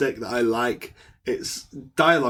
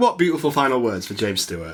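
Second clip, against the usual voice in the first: usual speaking voice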